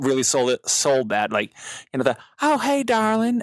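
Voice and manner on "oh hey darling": put-on high, floaty Southern accent. Recalling how a character named Stacy was voiced: Stacy's little Southern accent. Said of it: "he does that, like, little Southern accent for her".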